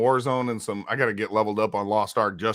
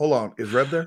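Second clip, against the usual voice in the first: evasive, cagey, stalling, dodging delivery; 3 semitones higher than usual. Doing an impression of a friend who avoids a match against him: imitating a friend. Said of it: "This is my impression of Moat".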